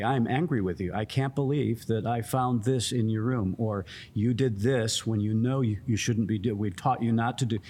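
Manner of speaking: plain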